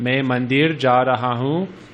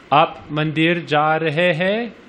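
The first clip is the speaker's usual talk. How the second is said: pitch rises at the end on final hai; 4 semitones higher than usual. Teaching Hindi, asking a question by voice without 'kya': rising question intonation. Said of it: "if you raise your, inflect your voice to a question".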